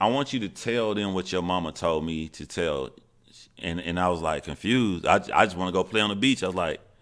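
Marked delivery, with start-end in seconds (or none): none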